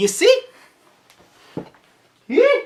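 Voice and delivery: cracking voice. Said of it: "my voice cracked there for a second".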